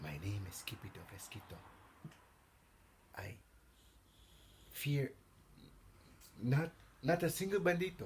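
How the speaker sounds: very, very soft, hushed little voice. Facing the banditos, Skipito stands his ground and answers in a very soft voice. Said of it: "in a muy, muy soft voice".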